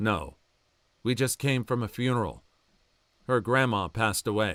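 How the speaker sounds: flat, dead-level monotone deadpan. Retelling what was said to a cheerful waiter: imitating own deadpan reply. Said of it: "the most deadpan voice I've got".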